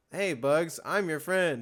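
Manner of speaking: unrehearsed, dead-level, flat read. Mocking an actor's cartoon scene lines: imitating LeBron's one-take delivery. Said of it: "sounded like he did it once on his own at home".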